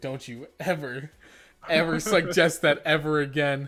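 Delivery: ordinary talk, nothing marked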